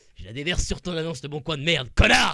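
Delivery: loud, raging, furious rant. Speaker venting at the seller of a Leboncoin ad: mock furious rant. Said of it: "J'ai mis ma colère et ma rage".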